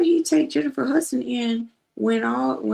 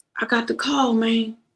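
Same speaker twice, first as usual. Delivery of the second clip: put-on quavering, unsteady, trembling voice. Retelling what a caller said on the phone, imitating a shaking voice. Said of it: "His voice was shaking".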